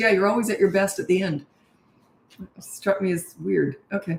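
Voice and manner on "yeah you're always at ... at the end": usual speaking voice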